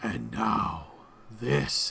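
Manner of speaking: deep, ominous, foreboding whisper. Game master voices an echoing voice heard as a player's character enters a room, deep ominous voice. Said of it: "this deep, sort of ominous voice that says".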